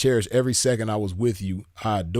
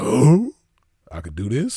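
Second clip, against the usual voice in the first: dim, loud, swooping caveman voice; 5 dB louder than usual. Figuring something out by himself, he acts it out in a caveman voice. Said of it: "I'm figuring shit out like a caveman".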